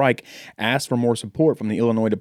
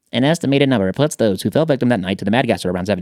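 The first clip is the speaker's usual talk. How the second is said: put-on fast, vintage, old-timey newsreel announcer voice; 4 dB louder than usual. Reading a story about the Mad Gasser to the others: fast old-timey news reporter voice. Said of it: "Like an old-timey news Reporter".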